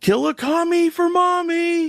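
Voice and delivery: high, loud, drawn-out drill sergeant scream. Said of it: "I remember him screaming out".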